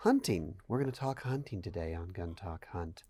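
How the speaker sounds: very low, very quiet, creepy announcer voice. A podcast host imitates how podcast hosts open a show: creepy public-access voice. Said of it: "you kind of got a little creepy".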